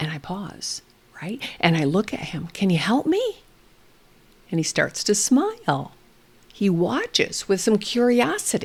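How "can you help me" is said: mock playful, curious, inquisitive tone. Retelling asking a child for help with a hat: imitating an inviting, inquisitive voice. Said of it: "my voice is inviting, is inquisitive".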